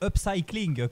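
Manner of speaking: 'upcycling' pronounced in an English accent. In French talk, saying the English word with an English accent on 'upcycling'. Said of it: "je vais faire travailler mon accent anglais".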